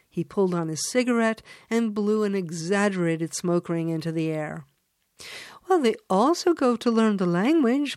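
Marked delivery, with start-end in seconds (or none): 5.7-8.0 calming, reassuring, soothing tone, pitched a little high. Answering a man's dismissive remark in conversation, soothing. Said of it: "[name] said soothingly".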